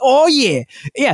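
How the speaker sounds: very high, fired-up, cheering jock yell. Mocking a jock gamer from a commercial: imitating a jock gamer cheering. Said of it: "he might as well be yelling touchdown".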